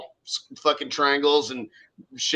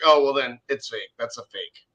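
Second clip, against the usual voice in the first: put-on disgusted tone; 3 semitones lower than usual. Retelling what a friend said to a woman in an elevator, imitating someone disgusted. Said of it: "all disgusted".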